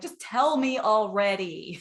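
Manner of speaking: insistent, pointed, emphatic, hard-stressed words. Retelling a group member's posted question: emphatic voice imitating Janice. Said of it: "Can you hear the emphasis in her voice?".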